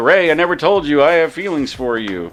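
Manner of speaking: plain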